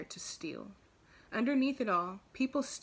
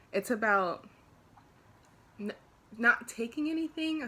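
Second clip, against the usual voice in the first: halting, stammered start, stuttering on n-; 3 semitones higher, 4 dB louder than usual. Yoga teacher trainee explaining asteya to listeners, stuttering. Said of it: "Sorry, I'm stuttering".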